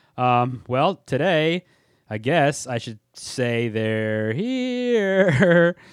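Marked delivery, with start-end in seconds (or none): 3.7-5.8 drawn out, stretched, clumsily done. Introducing a 1982 haunted-house film, quoting its line in Carol Anne voice. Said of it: "that wasn't probably a very good Carol Ann impression of they're here".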